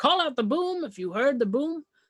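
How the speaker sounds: ordinary delivery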